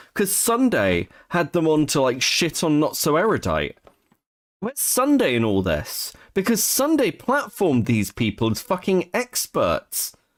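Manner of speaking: pissed-off venting. Speaker talks about people in the discussion, openly angry. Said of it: "I sound angry because I am".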